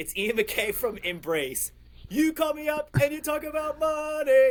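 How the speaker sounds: very high, rising shouted yell. Retelling putting a caller on hold and calling out: imitating own past yell. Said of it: "and I yelled".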